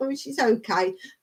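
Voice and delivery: ordinary delivery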